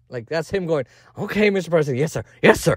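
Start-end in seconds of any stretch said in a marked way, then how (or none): 1.1-2.7 put-on dog voice. Acting out a dog answering the president, in a dog impression. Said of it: "That's my impression of a dog".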